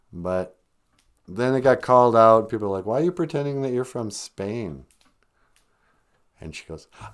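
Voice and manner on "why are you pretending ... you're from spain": ordinary talk, nothing marked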